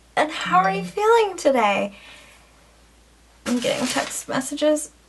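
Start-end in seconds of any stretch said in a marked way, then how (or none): 0.2-2.0 play-acted upbeat, hopeful, bright, higher optimistic voice. Imitating the listener's optimistic way of asking a question: mock-optimistic. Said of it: "you have this spark in your eye and you have this optimism in your voice, like".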